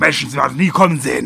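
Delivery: put-on loud, high, orc-like monster shouting, Saxon accent. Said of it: "dass du den im Deutschen den sächsischen Akzent gegeben hast".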